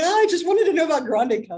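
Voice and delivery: screaming out, high-pitched and loud. Retelling being thrown to the floor by a friend: retelling own scream. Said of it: "screaming. I'm like".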